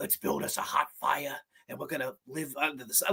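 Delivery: hushed whisper in a bad New York accent. Discussing a slasher movie, quoting the greaser character Glazer in a bad New York accent. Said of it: "that fucking bad New York accent".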